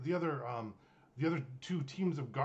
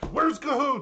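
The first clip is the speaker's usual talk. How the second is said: sudden, very high-pitched, loud yell; 10 semitones higher, 12 dB louder than usual. Retelling a character suddenly yelling out a question: imitating someone yelling. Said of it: "Tabby just yells out".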